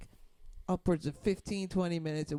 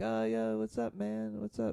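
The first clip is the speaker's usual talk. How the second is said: mock-drunk slurred speech, much higher pitched; 5 semitones higher than usual. Retelling a drunk guy on the street greeting the speaker and a companion, imitating drunk slurring. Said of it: "He's like kind of slurring his speech".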